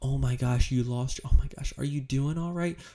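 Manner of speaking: anxious, worried, sympathetic, caring concern. Practicing tone shifts on hearing someone lost their mom: concerned, worried tone. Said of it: "To a concern tone".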